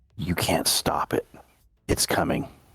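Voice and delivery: eerie whispered creature voice. Voicing a creature in a picture that tilts its head: whispering creature. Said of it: "and then just whispers again".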